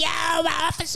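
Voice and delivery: shrill, very high-pitched hollering yell. Retelling a man in a paddy wagon calling out: imitating a man yelling. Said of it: "He starts yelling at the cop".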